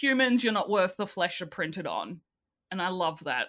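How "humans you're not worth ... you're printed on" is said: normal talking voice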